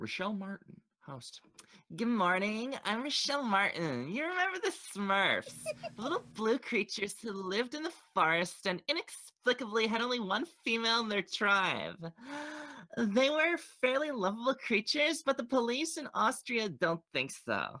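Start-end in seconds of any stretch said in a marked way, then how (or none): 2.0-17.8 put-on girl voice, higher. Reading a news transcript aloud as asked: put-on girl voice. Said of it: "You gotta read it like a girl".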